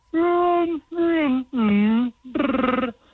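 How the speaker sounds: put-on growling creature voice. Repeating the impression on request: bad Chewbacca impression. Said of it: "I'd like to hear that again".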